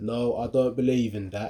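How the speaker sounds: put-on British accent. Speaker acting out another guy's words, in a typical British accent. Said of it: "typical British accent".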